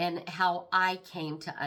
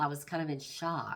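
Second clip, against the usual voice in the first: plain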